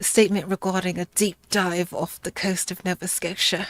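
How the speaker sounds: fake put-on British accent, read aloud. Reading the opening of a Magnus Archives episode aloud: fake UK accent. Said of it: "I should read it in my U K accent".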